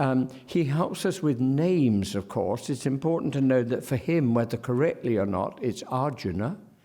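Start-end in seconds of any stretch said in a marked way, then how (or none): 5.8-6.6 Arjuna said with stress on the first syllable Ar. Explaining how he says names: stress on Ar in Arjuna. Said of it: "the stress on the first syllable there".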